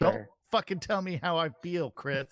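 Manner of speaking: put-on anger. Snapping back at a speaker who described their mood: mock angry. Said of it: "That sounds pretty angry".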